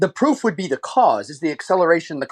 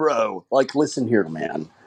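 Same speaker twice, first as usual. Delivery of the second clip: put-on Valley California accent, pitched low; 6 semitones lower, 3 dB quieter than usual. Showing the group how he does an American accent: Valley California accent. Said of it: "best Valley, California accent ever".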